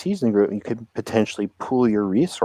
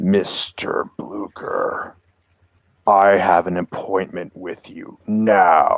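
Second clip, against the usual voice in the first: very deep, slow, droning bass voice; 2 semitones lower than usual. Voicing a sickle-wielding figure addressing Mister Blucher, very deep bass droning voice. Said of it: "very deep bass sort of droning voice".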